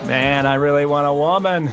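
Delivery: big, crazy, over-the-top comedic voice. Describing a dating show contestant having fun with three women: crazy John Mulaney voice. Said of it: "That is a crazy voice".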